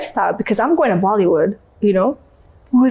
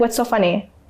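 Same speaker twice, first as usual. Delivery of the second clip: put-on angry, challenging attitude; 3 dB quieter than usual. Retelling confronting people who laughed: imitating own angry attitude. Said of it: "I would have this dirty attitude".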